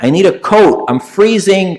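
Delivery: put-on, high, drawn-out shouted cry. Recounting a woman who starts shouting while eating her dinner, retelling her shouting. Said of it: "Then she starts shouting".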